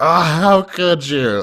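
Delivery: mock very high, loud, weepy crying outcry. Retelling own reaction to an anime scene: imitating own crying. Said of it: "I was crying".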